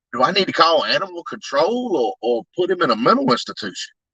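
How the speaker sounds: plain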